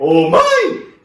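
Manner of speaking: very loud, very high-pitched yelling shout. Demonstrating how you try to shout, calling out to mom: shouted call. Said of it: "quando você tenta gritar".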